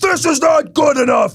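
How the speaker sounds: furious, screaming, high-pitched yell. Playing Jim Irsay in a trade scenario, imitating Jim Irsay yelling mad. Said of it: "I am yelling, screaming, mad, super pissed Jim Irsay".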